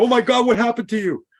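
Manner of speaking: very high, shrill, loud, panicked freak-out. Acting out a mother reacting to her child's fall: freaking out mother. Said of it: "if the mother freaks out".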